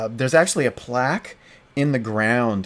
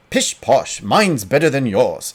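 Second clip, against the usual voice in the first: loud put-on Scottish accent; 2 semitones higher, 5 dB louder than usual. Reading chat-given dialogue as Skeleton one, in a Scottish accent. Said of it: "Since we're doing Scottish accents".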